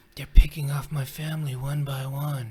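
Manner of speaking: mumbling with a loud rasp. Retelling a trailer line the character Paul says: mumbly raspy Paul voice. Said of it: "in his kind of mumbly, raspy voice".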